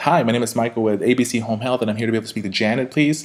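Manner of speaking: a rapid, high-pitched tone, rushed through. Showing the wrong way to introduce yourself, fast, high-pitched voice. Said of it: "to have the high pitched voice and saying".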